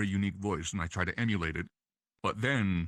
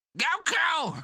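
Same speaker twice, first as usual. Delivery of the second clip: cartoon voice, speech impediment, higher and louder; 5 dB louder than usual. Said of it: "King Kai kinda has a".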